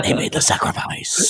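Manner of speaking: breathy, hushed whisper under the breath. Retelling a wrestling promo line: imitating Ultimate Warrior whispering. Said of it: "whispers out".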